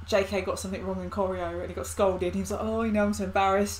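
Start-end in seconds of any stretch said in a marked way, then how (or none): none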